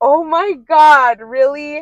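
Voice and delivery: stunned disbelief, very slow. Retelling how a friend reacted to the news: imitating a shocked friend. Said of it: "she was shocked to hear that".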